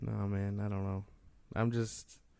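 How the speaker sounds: slow, dejected, down-sounding delivery. Answering the other speaker about the Flash movie, sounding down. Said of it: "You just sound so down".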